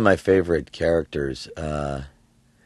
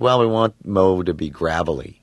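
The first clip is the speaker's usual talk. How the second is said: ordinary talk, nothing marked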